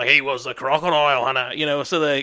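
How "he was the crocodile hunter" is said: put-on, cranked-up Australian accent, louder. Showing how Australians crank the accent up on TV: Steve Irwin impression. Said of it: "Steve Irwin".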